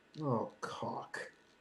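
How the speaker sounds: breathy whispered mutter, barely voiced, under the breath. A player voices her character's reaction during an uncomfortable questioning, muttered under breath. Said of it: "just like under her breath".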